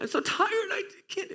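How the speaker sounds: put-on high-pitched, whiny, worn-out toddler voice. Retelling begging mom to skip an early shift: imitating own toddler-like whining. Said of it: "I sound like a toddler".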